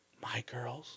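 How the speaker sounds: soft, hushed whisper under the breath. Retelling what a Pashtun man said about his girls: imitating a whisper. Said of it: "whispered it to me".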